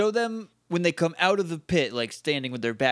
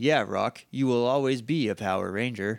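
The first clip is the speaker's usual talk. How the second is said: put-on flat, insincere voice; 5 semitones lower than usual. Recapping a show scene, speaker imitates Adam's flat, insincere line to Rocky. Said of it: "gives the flattest, like most unsincere".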